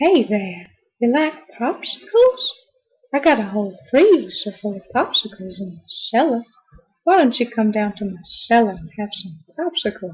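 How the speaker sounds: put-on eerie old man voice. Showing off his best impression, Herbert from Family Guy voice. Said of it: "the creepy old guy from Family Guy".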